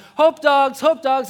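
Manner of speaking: very loud, high-pitched shouting yell. Speaker recalls handing out hot dogs at a parade, retelling own yell. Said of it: "I'm yelling".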